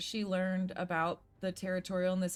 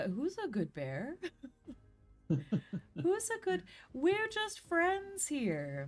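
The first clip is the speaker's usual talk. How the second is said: soothing high rising sing-song, like to a pet; 7 semitones higher than usual. Calming a bear in character, weapons lowered: sing-song voice to a bear. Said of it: "speak in a, like, a sing-song sort of way".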